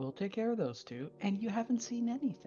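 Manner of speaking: stage whisper. Voicing a shaking man beside a dead body in a game scene, in a stage whisper. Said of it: "so stage whispers".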